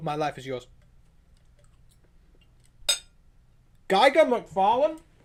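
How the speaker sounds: talking with mouth full. Listing wished-for comic shows while eating, talking with mouth full. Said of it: "I said that with my mouth full".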